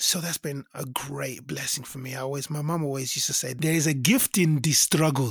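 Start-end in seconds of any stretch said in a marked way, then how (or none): 3.5-5.3 put-on Nigerian accent. Quoting what mom always used to say, in an African accent. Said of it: "in her African accent".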